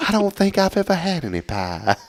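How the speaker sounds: put-on very high, swooping old-lady voice. Imitating the other speaker's pie answer in an old-lady voice. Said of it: "You sound like some old lady".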